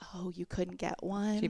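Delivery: imitated pitying whisper. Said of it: "you're whispering it".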